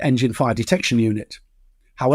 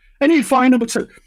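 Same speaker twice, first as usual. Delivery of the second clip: voice jumping way up, very high-pitched call-out; 12 semitones higher, 3 dB louder than usual. Retelling a cockpit engine fire, the speaker quotes the co-pilot, fairly high-pitched. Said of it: "fairly high-pitched".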